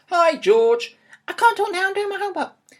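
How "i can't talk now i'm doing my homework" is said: rapid-fire, very fast, very high-pitched rattled-off patter. [name] answers his dad's greeting, talking very quickly. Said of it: "You're talking very quickly, [name]".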